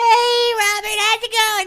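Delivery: squeaky helium voice, very high. Asked for a high-pitched voice, greeting robert in a high-pitched helium voice. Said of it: "Give me your high pitched voice, high pitched helium voice".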